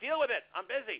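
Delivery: high, loud, curt and dismissive.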